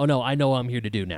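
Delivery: ordinary talk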